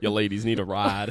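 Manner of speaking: low, deep, loud put-on cowboy voice. Answering a joke about a cowboy hat: put-on cowboy voice. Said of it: "where's your cowboy hat?".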